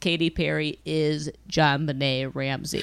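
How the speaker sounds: mock flat deadpan delivery. Retelling a line someone said in a TV episode, retelling a deadpan line. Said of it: "totally deadpans".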